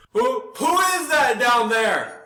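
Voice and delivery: high, yelled-out shouting voice. Game narrator voicing a guard calling down to someone below, yelling out. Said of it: "he yells out".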